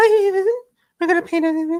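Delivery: very high voice, pitch shooting way up. The artist retells greeting people before painting, voice jumping way higher. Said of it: "I just went like twenty octaves higher".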